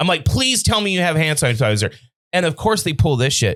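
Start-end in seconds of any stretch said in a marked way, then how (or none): 0.2-1.9 desperate, pleading, begging tone. Retelling asking the guy for hand sanitizer: imitating own past begging. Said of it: "I'm begging the guy".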